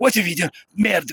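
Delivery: high-pitched, sudden, spat-out French. Retelling the scene where the Merovingian walks in, Merovingian cursing in French. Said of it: "cursing in French".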